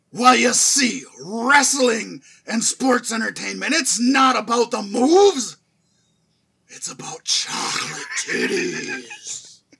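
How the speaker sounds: loud, booming voice with big swooping pitch swings. Reading a paragraph aloud after being asked: Vince McMahon voice. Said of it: "in Vince's voice".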